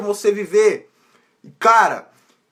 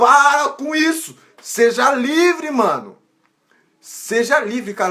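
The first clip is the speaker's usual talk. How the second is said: slow, deliberate, drawn-out preaching delivery; 4 semitones higher than usual. Preaching about pleasing others, urging listeners to be free: shouting loudly. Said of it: "Eu tô gritando pra caramba".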